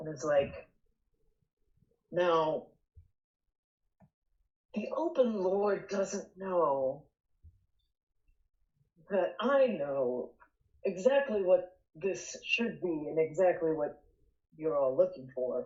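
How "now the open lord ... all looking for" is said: conspiratorial, secretive, confiding, leaning-in tone. A character leans in to the whole group, conspiratorial. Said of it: "like, conspiratorially".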